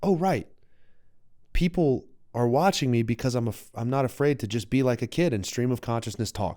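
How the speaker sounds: normal talking voice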